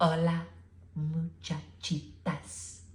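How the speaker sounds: very quiet whisper. Reading a story aloud, the narrator gives a character's greeting in a very soft voice. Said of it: "he said in a muy, muy soft voice".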